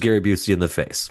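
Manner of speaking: ordinary delivery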